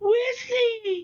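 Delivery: helpless, high-pitched screamed cry.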